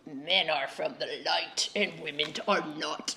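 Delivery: silly, dopey, goofy, low put-on voice. Quoting what the other speaker said yesterday, in a goofy voice. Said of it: "goofy voice".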